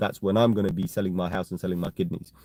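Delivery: ordinary talk, nothing marked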